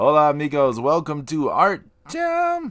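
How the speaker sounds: put-on, high-pitched character voice. Opening the Art Jam show as the character Pedro Boquedro, high-pitched voice. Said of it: "I have to do it high pitched".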